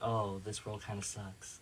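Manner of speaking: put-on depressed character voice. Showing how the game character Isol talks when asked: depressed Isol voice. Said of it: "he's kind of depressed".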